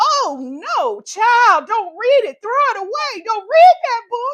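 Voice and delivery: very loud, high, drawn-out holler. Speaker retells yelling out at a book while reading, retelling yelling at a book. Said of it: "I literally yelled out".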